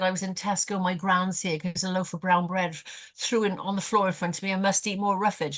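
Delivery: ordinary talk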